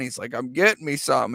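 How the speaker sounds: ordinary talk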